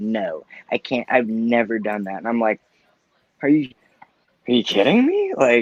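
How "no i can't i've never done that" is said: slow, deliberate, drawn-out mom voice. Retelling a talk with the mother, an impression of the speaker's mom. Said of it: "That was a really good impression of your mom".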